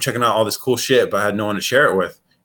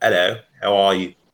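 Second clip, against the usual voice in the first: put-on upper-class posh English accent. Showing how Americans picture the London accent: imitating an English accent. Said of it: "an impression of what the accent sounds like".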